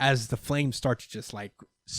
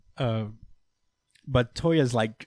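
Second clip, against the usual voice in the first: ordinary talk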